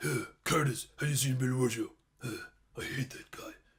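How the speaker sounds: low, gravelly growl with gravel in throat. Describing how Castle always talks, doing a gravelly Castle voice. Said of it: "always having some gravel in his mouth".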